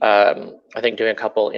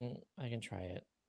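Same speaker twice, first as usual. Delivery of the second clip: reluctant, unenthusiastic, quieter; 27 dB quieter than usual. Agreeing to try joining by phone before wrapping up: reluctant. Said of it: "You sound super excited".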